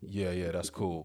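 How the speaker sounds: voice dropped way down, deep and put-on. Retelling what the wife replied, imitating a deep voice. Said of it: "Don't do the voice".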